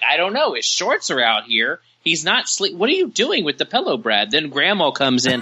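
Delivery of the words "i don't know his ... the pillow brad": high, swooping, confrontational, demanding voice. Retelling being caught by mom holding the shorts: imitating mom catching son. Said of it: "She's like".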